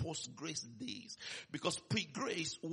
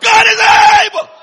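very loud, high-pitched yell; 33 dB louder than usual. Leading listeners through verse 8, the speaker is shouting. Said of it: "Somebody shout".

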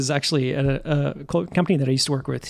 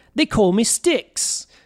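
put-on British accent, higher pitch; 8 semitones higher than usual. Describing a show's little drummer boy, quoting how he introduces himself: British accent as Styx. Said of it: "you just did a British accent".

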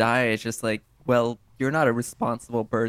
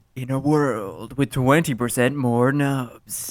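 epic movie trailer announcer voice. Urged on by the others, the speaker performs in a movie trailer guy voice. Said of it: "do the trailer guy voice".

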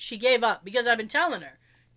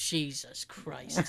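mock mutter under breath, much lower and quieter; 7 semitones lower, 8 dB quieter than usual. Retelling his dad's reaction to Mom's request; imitating dad muttering under breath. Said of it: "My dad is like under his breath".

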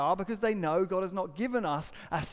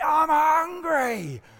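rude, high, loud bellowing yell; 9 semitones higher, 7 dB louder than usual. Retelling how your rude middle son ran straight in on your conversation, imitating a son yelling. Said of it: "He was yelling at me".

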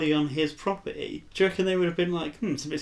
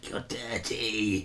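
very deep, low, hushed, soft golem creature voice; 7 semitones lower, 5 dB quieter than usual. Retelling a story scene, imitating the voice a character hears: golem voice. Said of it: "The golem voice is just like".

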